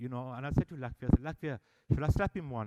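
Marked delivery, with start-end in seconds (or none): none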